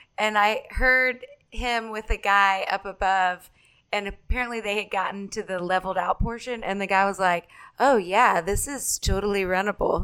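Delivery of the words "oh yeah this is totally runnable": mock-sarcastic, put-on sarcastic delivery. Retelling what a guy above them on the climb said, imitating his sarcasm. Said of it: "He was being very sarcastic".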